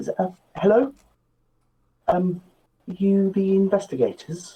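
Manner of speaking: sheepish, faltering voice. Voicing a short fellow approaching the investigators' table: sheepish. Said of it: "just sort of leans in rather sheepishly".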